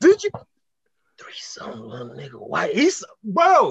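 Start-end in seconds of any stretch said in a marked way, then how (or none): 1.2-2.7 very deep, very low horror-film demon voice. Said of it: "should be in The Conjuring with that type of voice".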